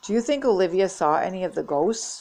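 ordinary delivery, nothing marked

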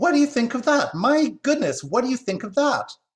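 tiny, very high-pitched, loud exclaiming cry. A squirrel calls down through the branches to a mother and son who just fled, small voice crying out. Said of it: "cried a diminutive voice".

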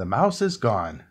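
ordinary delivery

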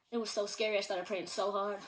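ordinary delivery

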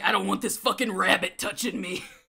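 grumpy, grouchy cartoon character voice. Voicing a character's reaction to a rabbit touching him, Husk impression. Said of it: "that was a really good Husk impression".

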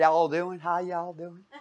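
mocking Southern accent. Mocking how the speaker's sister now talks, in a stupid Southern accent. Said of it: "my sister with this stupid Southern accent".

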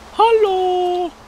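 very high, loud, cooing voice.

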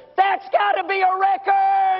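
mock, loud, high, drawn-out blurted remark. Retelling a joke where a boy on the front row speaks: imitating a loud remark. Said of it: "just as loud say to the other".

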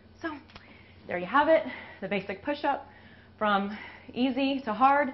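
winded, phrases breaking apart. Finishing a push-up demonstration, the speaker sums up while out of breath. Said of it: "obviously I'm out of breath".

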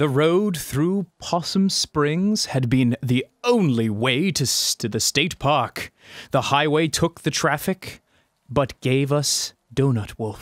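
weak, not-quite-convincing put-on narrator voice. Asked to read it like a narrator, reading aloud in a not very good narrator voice. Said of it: "it's not a very good narrator voice".

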